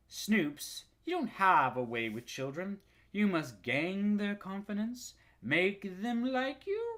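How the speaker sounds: threatening, sensuous purr. Reading a character's line to Snoops from a story, Geraldine Page's sensuous, threatening purr. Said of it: "purred the sensuous yet threatening voice".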